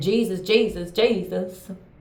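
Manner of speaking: play-acted, scornful, mocking preacher-style calling out. Mimicking people who keep calling on Jesus: mocking imitation of people crying Jesus. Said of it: "I'm gonna say it like that 'cause y'all be just like that".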